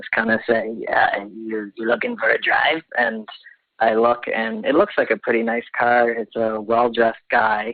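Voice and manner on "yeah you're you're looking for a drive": deep, low, nasal-toned voice. Retelling what a driver said from an SUV: imitating a low, nasally voice. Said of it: "this kind of low, nasally voice".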